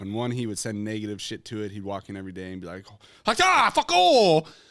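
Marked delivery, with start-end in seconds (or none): 3.3-4.4 very high, very loud put-on Japanese accent. Retelling a video of a man talking to water gallons: put-on Japanese accent. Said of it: "lost his accent when he was being nice?".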